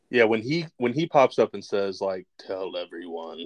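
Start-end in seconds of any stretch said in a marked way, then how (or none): 2.3-3.4 deep, very quiet, grave, weighty hush. Quoting what he says when he pops up, in his Candyman voice. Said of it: "in his Candyman yeah. voice".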